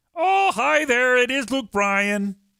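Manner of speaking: very high, squeaky frog puppet voice. Retelling a line from something the speaker watched, in Kermit the Frog voice. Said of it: "he's Kermit the Frog".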